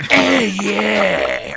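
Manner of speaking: put-on deep smoky voice. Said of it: "it's like a more deeper, like, cigarette".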